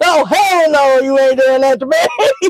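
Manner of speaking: put-on panicky, alarmed delivery. Acting out a trucker told he gets a different truck: imitating a panicking trucker. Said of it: "a trucker sit there and panic".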